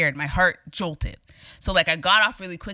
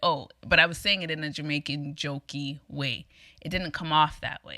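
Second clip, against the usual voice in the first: normal talking voice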